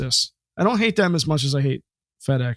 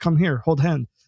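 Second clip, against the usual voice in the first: put-on Israeli-accented speech. Retelling what the beekeeper said before the test sting: Israeli accent. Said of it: "I'm not doing the accent justice".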